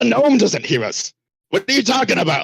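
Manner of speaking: hollering, high pitch. Cutting in while the others are whispering, yelling. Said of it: "Vrock yells".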